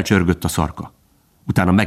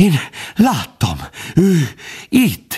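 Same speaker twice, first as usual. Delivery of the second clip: high, halting, very slow stammering; 9 semitones higher than usual. A deer who has just fled back into the thicket speaks, stammering.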